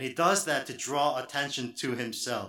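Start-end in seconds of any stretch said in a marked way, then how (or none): none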